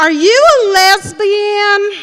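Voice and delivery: put-on Southern accent, very high-pitched and loud. Retelling their roommate's question, asked in her best Southern voice. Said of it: "said in her best Southern voice".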